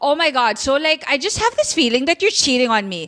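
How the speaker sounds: sudden, attacking, accusatory outburst. A speaker acts out a woman suddenly attacking her boyfriend, mock accusatory outburst. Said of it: "suddenly you just attack your boyfriend and be like".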